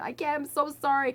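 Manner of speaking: put-on screaming. Retelling a painful bumpy ambulance ride up a hill: imitating own screaming apology. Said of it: "I was screaming and apologizing the whole time".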